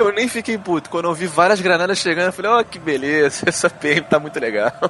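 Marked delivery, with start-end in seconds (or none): 2.5-4.7 put-on laughing while speaking, slower. Retelling what you said as grenades arrived after a match, retelling laughing while speaking. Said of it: "eu rindo assim".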